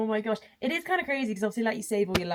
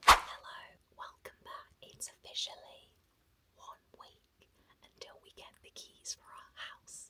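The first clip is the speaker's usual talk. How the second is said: hushed whisper. Welcoming viewers back one week before getting the house keys, whispering. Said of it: "I'm whispering".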